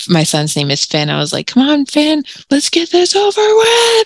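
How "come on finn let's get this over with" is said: very high, rising, effortful roaring yell. Retelling pushing in the birth pool: retelling own roaring yell. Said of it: "yell, like, roaring it out".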